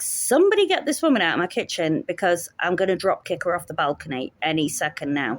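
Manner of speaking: ordinary talk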